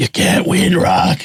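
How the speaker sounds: raspy boxing-coach voice, rasp pushed through. Quoting the coach Mickey from Rocky, in a Burgess Meredith rasp. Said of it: "Get that awesome rasp".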